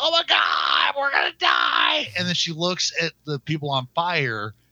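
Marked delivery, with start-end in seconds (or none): 0.0-2.1 panicked scream, shrieking. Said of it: "she's always going".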